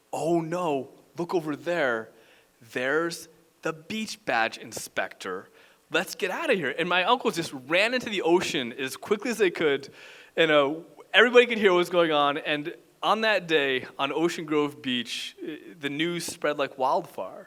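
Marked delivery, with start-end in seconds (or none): none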